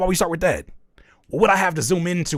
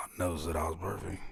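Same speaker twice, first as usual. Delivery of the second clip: very deep, very quiet murmur in a put-on voice; 9 semitones lower, 14 dB quieter than usual. Mocking how another person sounded: imitating someone in a deeper voice. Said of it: "That's how you sound".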